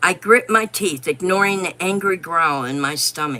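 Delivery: ordinary delivery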